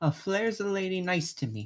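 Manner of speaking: plain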